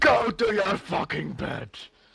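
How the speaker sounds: high, drawn-out holler in character voice. Voicing a character yelling from bed before falling asleep: yelling in character. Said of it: "I yell".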